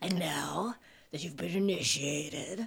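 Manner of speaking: very low, deep put-on voice. Hosts tell listeners they are now initiated, in a very low Satan voice. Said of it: "We just get very low Satan voices".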